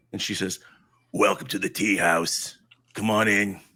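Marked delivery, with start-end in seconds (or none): 1.1-3.5 put-on old woman voice, faster. Narrating a game, voicing the ancient lady behind the tea house window: Granny Grimgarth voice. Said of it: "an ancient lady of unusual size".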